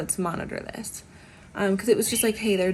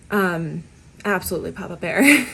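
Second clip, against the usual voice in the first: ordinary delivery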